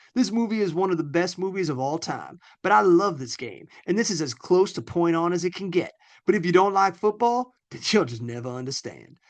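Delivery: put-on Southern accent. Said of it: "you're reading them like Foghorn Leghorn".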